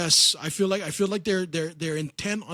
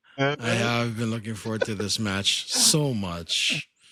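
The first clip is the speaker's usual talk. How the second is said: slow, low sarcastic drawl. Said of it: "The sarcasm is so palpable".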